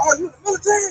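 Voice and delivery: acted, eager, thrilled excitement. Retelling how they asked about being in the military: retelling own excited question. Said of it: "I was getting excited".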